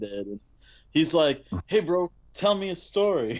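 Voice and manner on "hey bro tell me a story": lively, animated, pitched-up male voice. Retelling what a passenger said during a ride: imitating an animated guy. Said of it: "he was so animated".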